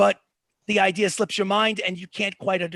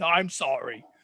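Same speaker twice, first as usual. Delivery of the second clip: apologetic, submissive dog voice, pitched lower; 4 semitones lower than usual. Voicing the dog after it bows in a submissive position: apologetic dog voice. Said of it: "you can just tell it's basically".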